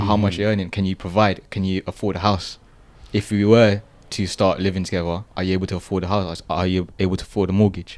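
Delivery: normal talking voice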